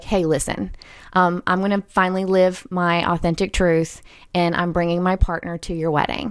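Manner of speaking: ordinary talk, nothing marked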